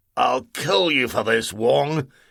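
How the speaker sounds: strangled, choking voice. A man gripped by giant hands threatens his captor, in a strangled voice. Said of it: "in a strangled voice".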